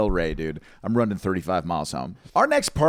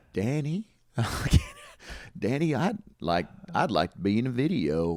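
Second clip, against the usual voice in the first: slow, drawn-out Southern drawl; 5 dB quieter than usual. Doing a Forrest Gump impression after being asked for one. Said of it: "Do a Forrest Gump impression".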